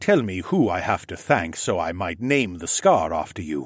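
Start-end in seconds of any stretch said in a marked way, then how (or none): none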